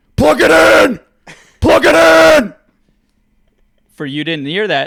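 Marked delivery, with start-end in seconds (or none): 0.2-2.6 raw, rough, very high and very loud scream. Retelling how a man yelled out his car window at a Tesla: retelling a scream. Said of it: "starts screaming".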